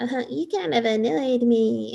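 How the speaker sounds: put-on gentle, coy child voice. Retelling what a woman said in bed: imitating a little chipmunk voice. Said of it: "Little chipmunk voice".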